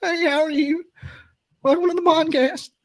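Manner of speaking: mock wobbly, quavering voice, very high. Podcast host retelling welcoming a big-name writer guest, imitating own quivering voice. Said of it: "having the quiver voice like I do".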